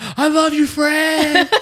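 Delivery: put-on very high fan shriek, drawn out. Retelling calling out to a band member during quiet spots: imitating screaming. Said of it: "So I would scream".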